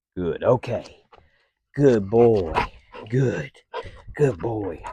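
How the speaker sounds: animated, sing-song, heavily inflected delivery. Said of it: "So you can see how voice inflection right there".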